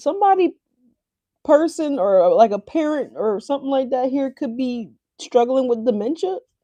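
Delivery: high, choked-up voice, near tears. Speaking to the audience at a sensitive moment, emotional, near tears. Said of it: "I didn't mean to get emotional here".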